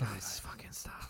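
hushed, scolding whisper. Telling the others to stop, whispering. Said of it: "I like how we're whispering".

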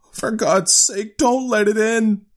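very high, quavering, trembling cry. Narrator reads an old man holding back a struggling woman, trembling cry. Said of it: "cried the old man, trembling".

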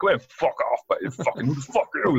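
put-on thick Cork accent. Retelling a rude answer given in a bar: imitating a thick cork accent. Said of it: "He had a big thick Cork accent".

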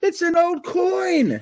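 mock, very high, very slow yell, word stretched. Speaker retells Gary getting a hit while detecting: retelling a yell. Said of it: "he yells".

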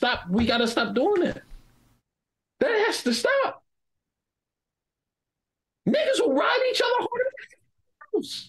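squeaky, very high, climbing ranting voice. Ranting about gatekeepers, the speaker's voice jumps squeaky high. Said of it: "Your voice went Mickey Mouse".

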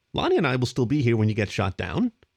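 plain reading voice

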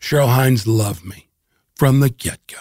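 gentle voice. Answering questions about the series and a costar, gentle voice. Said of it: "and I say that in a gentle voice".

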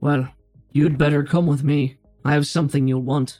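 modulated filtered voice, not quite robotic. A helmeted stranger answers a newcomer, in a modulated helmet voice. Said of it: "this is a modulated voice through the helmet".

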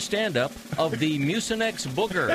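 normal talking voice

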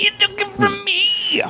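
very high-pitched, annoyed and sore. Describing a man who is mad something was taken, imitating how he talks. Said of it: "That's how he talks".

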